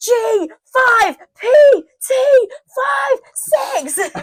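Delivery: screaming in frustration, high and loud. Recounting screaming codes to him in the other room, retelling screaming them. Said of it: "I'm like screaming them to him".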